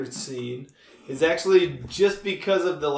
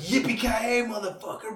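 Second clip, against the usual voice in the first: put-on excited, enthusiastic yell, higher; 6 semitones higher than usual. Retelling how a line was remembered: imitating an enthusiastic shout. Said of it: "being a lot more enthusiastic".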